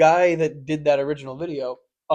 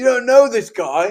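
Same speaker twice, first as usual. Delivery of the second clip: acted, frantic, high, worked-up freaked-out exclamation; 7 semitones higher, 7 dB louder than usual. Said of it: "freaking out".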